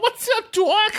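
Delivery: very high-pitched, full cartoon rabbit voice. Told you sounded like Mel Blanc, play along in a Mel Blanc voice. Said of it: "you sounded more like Mel Blanc or something".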